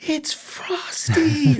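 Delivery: very high, tiny, wonder-struck little voice. Retelling a voice heard from a car slowing by the house: imitating a little awed voice. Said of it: "the sound of this little voice in there going".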